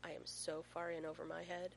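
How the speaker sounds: ordinary delivery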